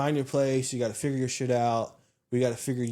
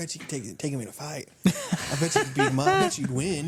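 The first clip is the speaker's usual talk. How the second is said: hushed whisper, close to the ear; 4 semitones higher than usual. Retelling how the other speaker egged a kid on: imitating someone whispering. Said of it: "you're whispering in your ears".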